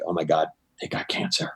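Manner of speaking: breathy whisper. Describing how people from New Jersey talk about illness, imitating a lowered-breath hush. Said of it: "they kind of lower their breath".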